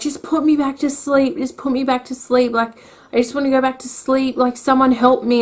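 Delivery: acted, high, frantic, breathless, desperate, panicked pleading. Retelling screaming for help in hospital: imitating someone screaming for help. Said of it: "And I was screaming".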